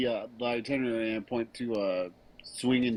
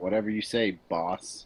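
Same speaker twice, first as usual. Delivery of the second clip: patronizing, condescending, dismissive tone; 4 semitones lower than usual. Playing a character dismissing the boss's rules: condescending. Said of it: "I say it very condescendingly".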